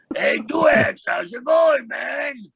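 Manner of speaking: high, loud ventriloquist dummy voice. Retelling a visit from ventriloquist Peter, ventriloquist dummy voice. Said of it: "I hear his ventriloquist dummy's voice".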